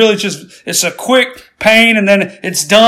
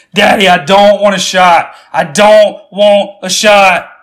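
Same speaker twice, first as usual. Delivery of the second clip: ordinary talk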